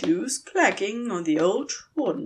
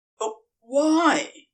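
small, high, squeaky voice; 5 semitones higher, 3 dB louder than usual. Made to jump by a groan and a slammed door, he squeaked. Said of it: "He squeaked".

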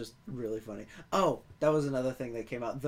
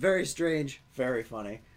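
ordinary talk

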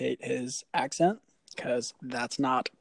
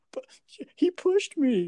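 put-on crying child voice, much higher, louder; 4 dB louder than usual. The speaker acts out a kid's protest after being told off, imitating a kid crying. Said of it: "he starts crying".

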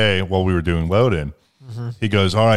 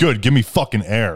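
put-on agitated tone, higher pitch; 3 semitones higher than usual. Retelling a passenger's reply after getting into the car, imitating an agitated man. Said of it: "he was already agitated with something".

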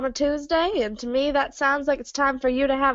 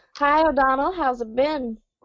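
ordinary talk

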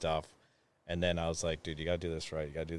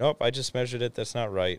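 put-on voice, higher pitch and louder; 6 semitones higher, 7 dB louder than usual.

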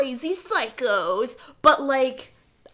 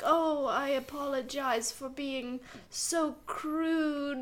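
slow, drawn-out, drawling dandy villain voice; 8 dB quieter than usual. Retelling how the villain Doyle talks through the movie: imitating the villain Doyle. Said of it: "and he's like".

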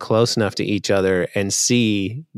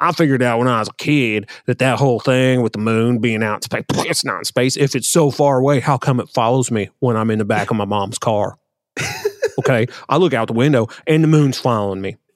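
put-on regional hometown accent, playing dumb; 3 semitones higher than usual. Speaker launches a bit pretending to be dumb, put-on hometown accent, playing dumb. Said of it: "I always put on the accent of my people".

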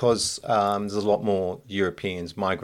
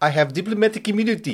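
put-on clichéd South African accent, pitched up; 12 semitones higher, 3 dB louder than usual. Responding to a person's accent, quoting a film in a Lethal Weapon 2 South African accent. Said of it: "that is the stereotypical South African".

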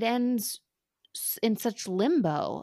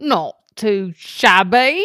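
booming, very loud put-on Cockney accent; 11 dB louder than usual. Before giving a Jane Austen quiz, the quizzer tries a Cockney accent. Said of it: "That's a Cockney accent".

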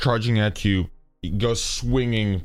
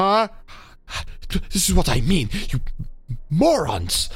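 high, weak voice of someone dying; 9 semitones higher than usual. Voicing a character whose arm was cut off, bleeding out: Spolar bleeding out. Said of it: "he's bleeding out, like".

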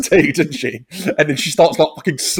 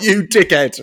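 put-on mocking laughing voice, higher pitch; 3 semitones higher than usual. Retelling how Pennywise points and laughs at her: Pennywise laughing mockingly. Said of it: "pointing at her and laughing like".

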